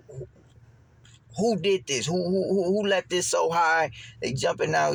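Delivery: high, angry yelling. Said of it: "I'm just going off".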